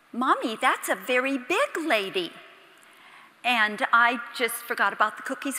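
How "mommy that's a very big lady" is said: put-on little three-year-old child voice. Parent retells their three-year-old daughter's remark in a bakery, rather loud three-year-old voice. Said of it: "rather loudly in her three-year-old voice".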